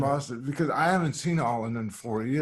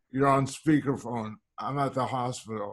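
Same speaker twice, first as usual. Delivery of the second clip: usual speaking voice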